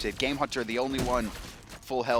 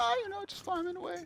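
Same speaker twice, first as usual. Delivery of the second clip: high, soft, mock friendly chummy chitchat. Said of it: "You're like".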